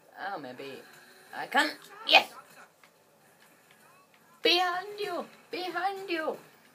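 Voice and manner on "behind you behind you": put-on high, loud, shouted German accent. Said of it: "I tried to do a German accent".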